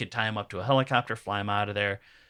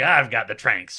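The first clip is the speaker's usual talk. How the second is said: ordinary delivery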